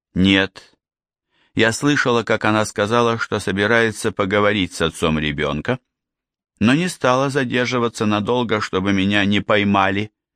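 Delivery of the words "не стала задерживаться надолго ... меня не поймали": plain reading voice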